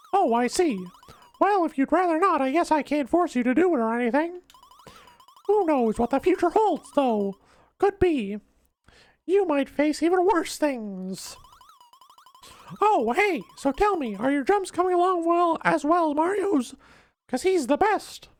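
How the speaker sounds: very high squeak with big swooping pitch. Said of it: "the terrible Mickey Mouse voice".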